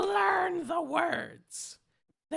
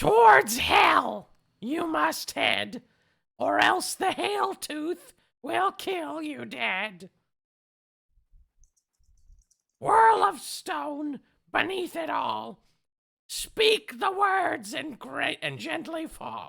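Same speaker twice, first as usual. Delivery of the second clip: slow, deliberate, drawn-out character voice. Reading a rhyming inscription aloud, in Meepo's voice. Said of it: "I have to read this whole thing in this voice".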